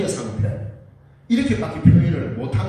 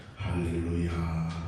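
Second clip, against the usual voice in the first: very deep, very soft, hushed, solemn tone; 13 semitones lower, 10 dB quieter than usual. In a sermon, mimicking someone acting holy: lowered, mock-pious voice. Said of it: "그런 목소리도 착 알고 할렐루야 이러면은".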